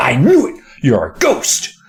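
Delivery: mock thrilled, super excited, swooping cheer. Acting out a book character discovering a ghost: imitating a super excited character. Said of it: "just super excited".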